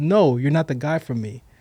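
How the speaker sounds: usual speaking voice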